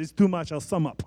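put-on poorly done Spanish accent. Speaker quoting a line from The Princess Bride, bad Inigo Montoya accent. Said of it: "that accent was bad".

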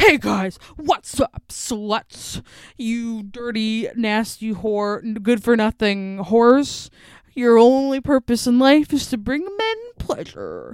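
loud, mock obnoxious male podcaster voice.

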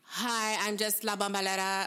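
terrible fake Latin American accent, R left unrolled. Retelling a woman's call into City Hall, quoting her in a terrible fake accent. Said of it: "in a terrible fake accent".

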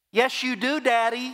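put-on tiny, very high, squeaky little-kid voice. Recalling his little son calling out from the back, Seth's little squeaky voice. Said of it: "I heard a little squeaky voice in the back it says".

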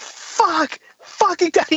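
sudden, angry, screamed outburst, a bit high. Speaker recounts to the listener what they screamed after a long silence, retelling a scream. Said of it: "you just screamed".

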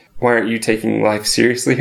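ordinary talk

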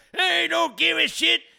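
put-on creaky elderly voice. Mimicking the other person's reply as a joke: put-on old man voice. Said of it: "You just do an old man voice that everyone stereotypically does".

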